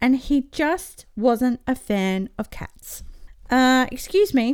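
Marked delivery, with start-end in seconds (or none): 3.5-4.6 curt, brusque, much higher. Narrator reads a train driver speaking to an annoying passenger, curt. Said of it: "said the train driver curtly".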